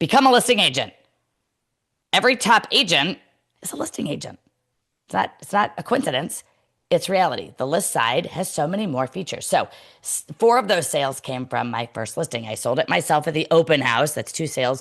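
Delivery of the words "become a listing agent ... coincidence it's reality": fervent, emphatic, fired-up passionate delivery. Urging listeners to become listing agents: passionate near-yelling. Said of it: "I'm gonna sound like I'm yelling".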